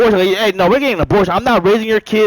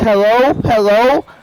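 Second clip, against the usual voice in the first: acted crying voice, tearful and broken by sobs. Retelling the moment she finally picks up the phone, imitating someone sobbing. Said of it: "she has this sobbing voice".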